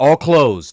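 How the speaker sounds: put-on brusque, curt, dismissive tone. Retelling what a worker said while they walked past: imitating a curt dismissive reply. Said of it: "this guy said it, like, as if we were trying to, like, rush past him".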